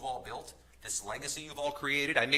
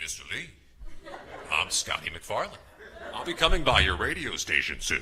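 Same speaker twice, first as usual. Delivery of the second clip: deep, loud put-on older broadcaster voice; 5 semitones lower, 5 dB louder than usual. Retelling a phone call to a program director, in a fake older broadcaster voice. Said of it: "fake, older a voice to pretend I was some senior broadcaster".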